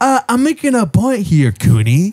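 put-on voice. Repeating the earlier line back to his co-host, doing that voice. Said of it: "I hate doing that voice".

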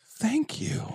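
whispered, breathy, sincere, heartfelt, grateful tone. Retelling how a movie character thanks another on the boat: imitating a heartfelt thank-you. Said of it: "this really heartfelt".

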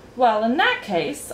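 ordinary talk

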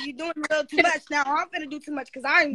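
ordinary talk

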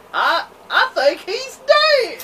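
put-on slow, high, drawn-out country accent drawl. Retelling what a guy behind them said, in a country accent. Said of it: "In this country ass accent".

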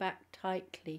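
plain reading voice

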